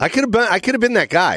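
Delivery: ordinary delivery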